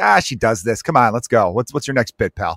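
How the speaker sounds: normal talking voice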